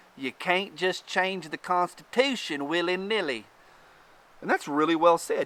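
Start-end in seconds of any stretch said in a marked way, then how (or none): 0.2-3.5 put-on Upper Midwest Wisconsin accent. Reading aloud a man's quoted remark: put-on accent. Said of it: "I read it with an accent. He could be from Wisconsin, but I read it like this".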